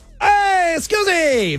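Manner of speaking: put-on Italian accent, pitched very high. Asked on a late-show call where a name comes from, in an Italian accent voice. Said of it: "I'm not sure if I'm allowed to do that voice".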